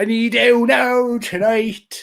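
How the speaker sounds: failed Irish accent, high and very slow. Speakers trying out accents on a repeated phrase, attempted irish accent. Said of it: "No, that's not Irish".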